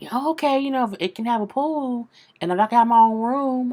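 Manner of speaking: put-on thrilled excitement. Retelling how the son answered the apartment news: imitating a very happy son. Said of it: "he got so happy".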